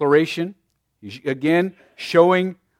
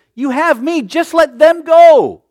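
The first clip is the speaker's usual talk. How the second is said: begging, imploring, very high, very loud and slow; 11 semitones higher, 9 dB louder than usual. Showing how a quoted line could be misread, in an imploring tone. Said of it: "Almost imploring them".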